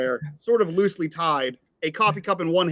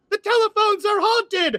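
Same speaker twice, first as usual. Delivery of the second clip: put-on sharp, very high, ringing girl's shout; 3 dB louder than usual. Voicing a girl heard running away outside: sharp girl's voice ringing out. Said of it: "a sharp, uh, girl's voice just ring out".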